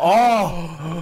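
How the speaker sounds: loud, high, swooning, lovestruck gentleman chef voice.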